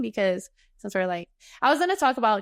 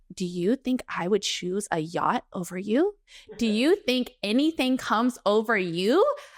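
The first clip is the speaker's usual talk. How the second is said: put-on worked-up, upset, getting-mad tone. Retelling own words when offered a yacht trip instead: re-enacting own upset words. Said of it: "getting upset".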